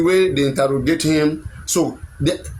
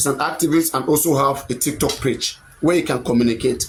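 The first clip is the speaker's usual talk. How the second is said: normal talking voice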